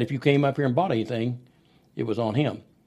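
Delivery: ordinary delivery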